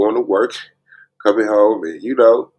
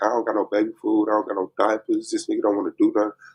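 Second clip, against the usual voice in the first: mock crying, tearful voice, quieter; 7 dB quieter than usual. Retelling how she called one day: imitating someone crying. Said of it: "she called me one day crying".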